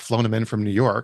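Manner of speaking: normal talking voice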